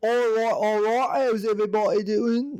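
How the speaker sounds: very high-pitched put-on Cockney accent. Explaining how people in a flashback didn't talk, doing a cockney accent impression. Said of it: "I was doing an impression of a Cockney accent".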